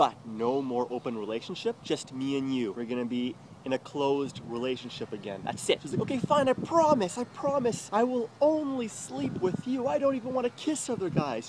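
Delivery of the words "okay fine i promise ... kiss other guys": very high, loud, weepy, tearful begging. Retelling his partner's promise to stay exclusive, imitating her crying and begging. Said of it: "She's like crying, you know, like begging".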